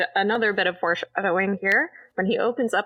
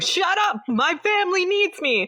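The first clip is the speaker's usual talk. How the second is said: put-on frantic screaming, much higher; 11 semitones higher than usual. Retelling how a man screamed while another man tried to calm him, retelling a frantic scream. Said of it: "he's just screaming".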